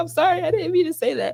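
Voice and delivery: very high-pitched, tearful, weepy crying voice, acted out. Retelling apologizing to an angry dad: imitating own past crying. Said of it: "I'm over here crying".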